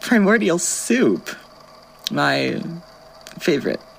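slow, openly sarcastic drawl. A character reacts to an announcement about a free snack kitchen, sarcastic. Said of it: "I say sarcastically".

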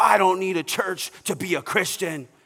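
mad, huffy, angry, defensive tone. Retelling what a man says when he gets mad: imitating an angry guy. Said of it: "he gets all mad and he's like".

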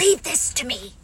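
hushed, half-whispered stage whisper. Rabbit, arriving at Kanga's house with the others, half-whispering. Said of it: "But Rabbit whispered".

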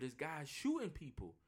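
put-on whispering. Retelling a woman's emergency call during a shooting, imitating her whisper. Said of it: "I gotta whisper".

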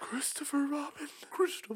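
breathy, sinister whisper like a menacing villain. Speaker repeating a name in a put-on voice, sounding like Voldemort. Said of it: "That sounded like Voldemort".

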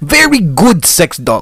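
loud, high, heavily laid-on, put-on Russian accent. Playing a sex store owner pitching a deal to a customer, in a Russian accent. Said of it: "Russian accent".

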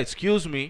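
put-on attitude. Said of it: "but with a, with, like, an attitude".

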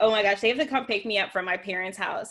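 ordinary delivery

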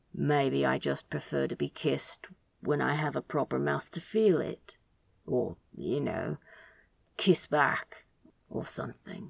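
hushed, low, reluctant but even and steady. Narrator reads Crowley's reluctant reply to Aziraphale, quiet but steady. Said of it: "(opening words) Kiss, a Good Omens fanfiction, written by Idonit, read aloud by [name]. If you enjoy this podfic, you can check out the original story on Archive of Our Own. If you would like to".

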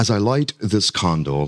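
failed, not-quite Australian accent attempt. Retelling a man's words, trying an australian accent that misses. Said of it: "and it's totally not Australian".

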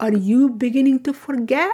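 play-acted, dead-serious, utmost earnest tone. Retelling a mother's question to her child, imitating her utmost seriousness. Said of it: "with the utmost seriousness and she says".

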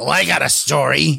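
raspy, rough, creaky New Jersey smoker's voice. Retelling what a woman said when approached, in a rough new jersey smoker's voice. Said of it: "real rough New Jersey smoker's voice".

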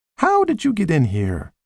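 high, lightly amused, wondering tone. Narrator reading a woman's question to the man, smiling while speaking. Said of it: "She asked him, smiling".

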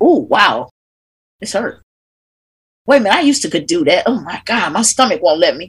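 self-critical, judgmental tone. Speaker guiding breathwork voices the judgment heard during body movement: acting out judgmental inner voice. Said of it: "then you hear the judgment".

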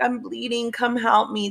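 put-on, distressed, girlish voice. Speaker retells a man's strange phone call, imitating a distressed girl's voice. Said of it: "trying to sound like a girl and all distressed".

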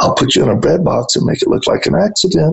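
imitated whisper. The speaker retells what she whispered when he teased her, imitating her whisper. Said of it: "She just whispered to me".

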